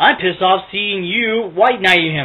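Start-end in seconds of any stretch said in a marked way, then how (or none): none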